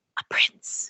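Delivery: tiny, hushed, barely audible, very quiet whisper. Voicing the daughter hidden at her father's side: very quiet voice. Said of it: "from very quietly in her father's side".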